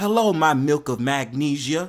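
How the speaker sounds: put-on flirtatious, fawning voice. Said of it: "And he be like".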